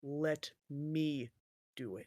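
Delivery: very slow, low, under-the-breath mutter. A narrator voices Tanathil stopping a player, Tanathil muttering under breath. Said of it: "mutters under his his breath".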